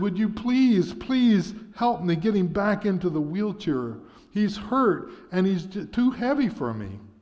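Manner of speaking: play-acted, high-pitched, tearful sobbing. Narrating a story, the boy asks the driver for help, sobbing. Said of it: "And now sobbing".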